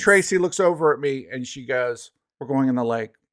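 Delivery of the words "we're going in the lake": put-on deadpan, flat, matter-of-fact delivery. Retelling what Tracy said while the car spun: imitating Tracy's matter-of-fact tone. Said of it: "the most matter-of-fact thing you've ever heard".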